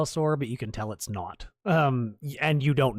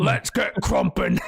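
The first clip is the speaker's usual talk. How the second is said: in-character dinosaur voice; 3 dB louder than usual. Voicing a Carnotaurus the players are fighting: voicing a Carnotaurus. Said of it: "The Carnotaurus says".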